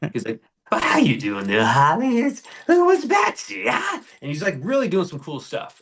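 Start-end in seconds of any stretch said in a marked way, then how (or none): 0.7-4.0 very high, swooping, drawn-out villain drawl. Retelling how a fan at a convention greeted her, in a Joker voice. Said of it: "giving me the Joker voice".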